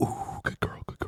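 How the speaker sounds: soft, hushed, breathy whisper. Imitating a horse chiropractor whispering to a horse: imitating a chiropractor whispering. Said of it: "whispering to it".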